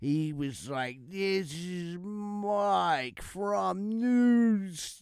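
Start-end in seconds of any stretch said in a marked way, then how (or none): 1.1-5.0 very slow, high, drawn-out slow-motion voice. Speaker retells how a caller's message sounded to the other host, imitating Mike in slow motion. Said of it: "he was talking in slow motion".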